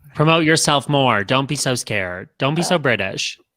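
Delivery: plain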